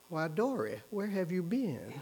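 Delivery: put-on very quiet, hushed, refined genteel Southern accent. Recalling being caught sneaking in at night as a teenager: quiet genteel southern accent. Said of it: "quietly asked in a genteel southern accent".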